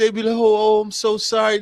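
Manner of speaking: mock tearful voice. Retelling your wife's phone calls at her job, imitating a tearful apology. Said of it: "like she was crying real tears".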